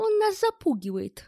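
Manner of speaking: loud, delighted, gleeful, very high-pitched cry. Ed answers Bell's threat, as if glad of a reason to fight; gleeful exclamation. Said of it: "словно обрадовавшись дополнительному поводу для драки, воскликнул Эд".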